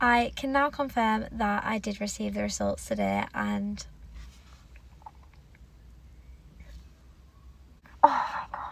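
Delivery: tearful, swooping voice. Announcing receiving the DNA test results today, crying while talking. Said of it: "I think I'm gonna cry again".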